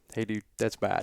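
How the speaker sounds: quiet whisper. Retelling what a man leaned over and said in his ear, retelling a whisper. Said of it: "he kind of whispers in my ear".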